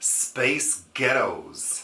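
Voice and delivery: put-on American accent. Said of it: "you say Space Ghettos in an American accent".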